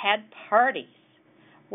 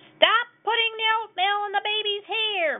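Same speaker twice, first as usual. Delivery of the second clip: shrill, very high-pitched yelling. Reading a story aloud, voicing the mother of a loud family: yelling. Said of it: "Ma Loud yelled".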